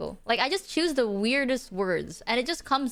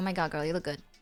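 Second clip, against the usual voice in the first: low, dead level deadpan with no intonation; 6 semitones lower, 5 dB quieter than usual. Showing how her normal voice sounds: flat deadpan voice, no intonation. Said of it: "I just go like".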